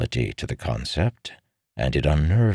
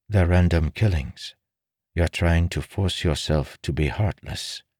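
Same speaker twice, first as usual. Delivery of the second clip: plain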